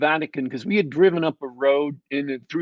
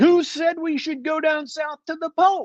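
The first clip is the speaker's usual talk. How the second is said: mock, very high, shrill, haranguing shout; 13 semitones higher than usual. Retelling a heated argument in the party: imitating Jeffro yelling. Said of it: "Jeffro was yelling".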